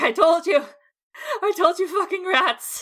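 breathless, panting, high, furious angry outburst. Voicing a character standing in dead rats, panting and furious. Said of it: "I'm just panting. I'm like".

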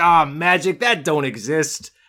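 put-on sudden, slow New York accent. Retelling a story, quoting a character who was once a bunny, in a New York accent. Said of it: "I don't know why he's suddenly New Yorker".

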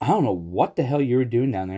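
plain

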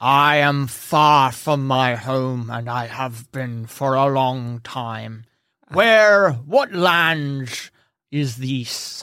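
orc voice, speaking as if through tusks. Voicing an orc far from home, asking where he is: orc talking through tusks. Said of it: "he talks through the tusks".

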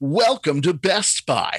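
over-the-top, exaggerated, drawn-out announcer voice. Retelling coworkers mocking a voice over the store intercom, exaggerated intercom announcer voice. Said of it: "we would do it as like exaggerated as possible".

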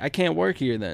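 usual speaking voice

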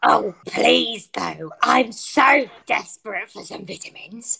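deep, low demon character voice. Playing a fruit demon begging others for fruit: Keith the fruit demon voice. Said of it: "it's Keith".

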